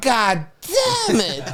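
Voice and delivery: put-on weird little baby voice, high and swooping in pitch. Telling about a friend's baby cursing for the first time: weird little baby voice. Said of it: "and like that weird little baby voice".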